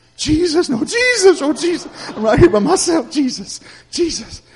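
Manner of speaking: put-on very high, terrified, panicked begging. Retelling being alone and seeing a shadow cross the wall: retelling scared pleading. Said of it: "I'm so scared".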